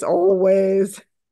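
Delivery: gloomy, mopey donkey voice. Replying to someone asking permission to coach them, gloomy Eeyore voice. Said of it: "There's my Eeyore voice".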